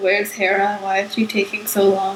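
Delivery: normal talking voice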